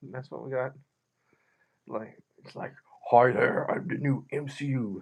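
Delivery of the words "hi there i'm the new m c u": heavy, deep, slow put-on character voice. Retelling waking up to a thing staring them in the face, deep voice. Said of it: "Got that deep voice".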